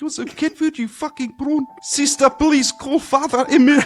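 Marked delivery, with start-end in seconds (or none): 1.8-3.9 put-on Polish accent, much higher, louder. Doing an accent bit as the other speaker names it: Polish accent.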